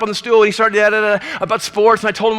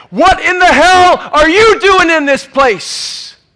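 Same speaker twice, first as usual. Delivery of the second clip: all-out yell at full force, loud and high; 7 semitones higher, 6 dB louder than usual. Telling a story, the speaker acts out a voice from behind, retelling a man's yell. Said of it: "a voice yells at the top of his lungs".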